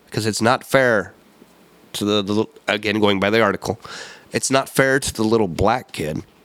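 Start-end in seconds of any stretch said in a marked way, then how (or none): none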